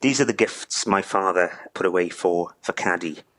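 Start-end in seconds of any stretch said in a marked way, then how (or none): none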